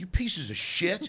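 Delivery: mock, unleashed, genuinely mad outburst, high furious yell. Retelling how a man yelled at a laughing crowd, imitating someone yelling. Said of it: "He starts yelling at us".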